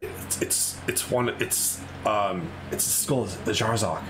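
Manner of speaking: halting, slow, hushed whisper. Voicing two guys whispering to each other about the skull: whispering in character. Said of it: "the two guys are kinda whispering to each other, like".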